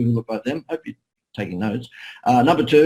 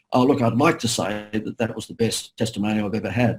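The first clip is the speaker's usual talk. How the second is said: ordinary delivery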